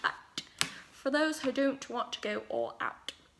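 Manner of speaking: sudden, unplanned slip into a British accent. A makeup tutorial host talks through the eye look, in a british accent. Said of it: "I don't know why I said that with a British accent".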